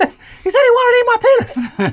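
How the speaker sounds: put-on squeaky, very high little-kid voice. Rereading a user's line from an article: put-on high-pitched child's voice. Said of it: "in a high-pitched child's voice".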